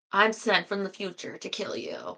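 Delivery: mechanical, robotic delivery. Describing a scene, the speaker acts out a robot's line in a robot voice. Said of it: "so he's like a robot doing the robot".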